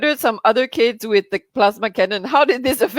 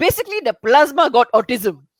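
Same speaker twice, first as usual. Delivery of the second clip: put-on fake Indian accent. Reading out a comment from Prakash Daniel: put-on Indian accent. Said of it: "say it in the Indian accent".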